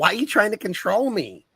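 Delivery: high-pitched, horrible woman voice. Impersonating the worst woman on earth while talking about bad partners. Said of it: "doing her impersonation of the worst woman on earth".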